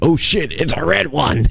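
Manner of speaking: high, hushed put-on voice.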